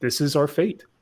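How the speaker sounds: normal talking voice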